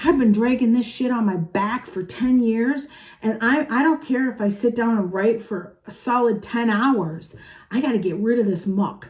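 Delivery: plain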